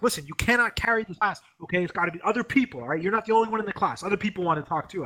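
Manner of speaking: put-on high, exasperated, irritated, snapping teacher voice. Retelling how he snapped at them in class for talking too much, imitating someone snapping. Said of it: "He snapped at me".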